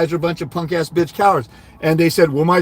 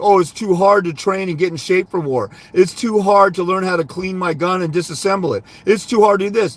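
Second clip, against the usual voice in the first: usual speaking voice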